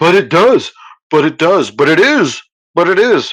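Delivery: high, scornful, derisive taunting voice. Mimicking how flat earthers restate their claim, mocking flat earthers. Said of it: "restate the baseless assertion".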